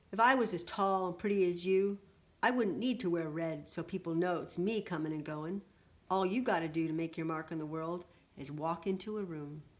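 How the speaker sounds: ordinary delivery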